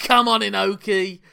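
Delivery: loud, high, goading, taunting wrestler-style shout. Recounting a wrestler calling out Inoki during a match, retelling a yell. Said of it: "So he's just yelling".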